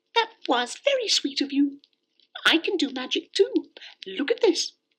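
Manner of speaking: very high, playful, frisky kitten voice. Reading a bedtime story aloud, voicing the next-door kitten. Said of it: "the next-door kitten came scampering through the grass and trotted up to [name]. / she said, / xx Bedtime Stories xx".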